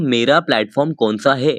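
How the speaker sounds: ordinary delivery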